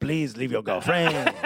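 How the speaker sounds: put-on, fake French accent. Imitating a phone call urging someone to move to Montreal: put-on French accent. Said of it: "when you do that voice".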